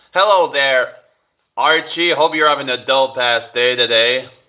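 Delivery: put-on American accent. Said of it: "do your best American accent".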